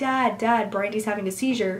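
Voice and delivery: plain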